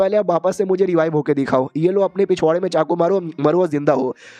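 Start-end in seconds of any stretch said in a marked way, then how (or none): none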